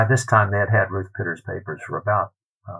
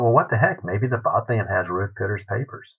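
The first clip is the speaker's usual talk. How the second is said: ordinary delivery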